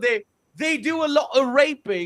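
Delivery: put-on British accent. Joking while talking about Germany, in a put-on British accent. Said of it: "that's the British accent".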